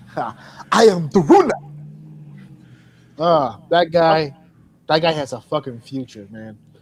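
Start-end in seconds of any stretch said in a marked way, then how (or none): 0.7-1.5 loud, fake, put-on Nigerian accent. Imitating a wrestler's line: imitating a fake Nigerian accent. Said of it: "That's a real Nigerian accent".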